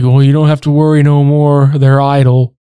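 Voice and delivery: put-on flat monotone voice. Quoting Rick telling them not to worry anymore: flat Rick monotone. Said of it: "So Rick is so monotoned. When he says this, he's like".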